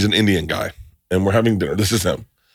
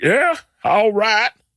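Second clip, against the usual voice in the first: put-on very high-pitched, botched Southern accent; 13 semitones higher than usual. Retelling a man's attempt at an Indian accent, speaker performs it in a Southern accent. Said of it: "That is a Southern accent".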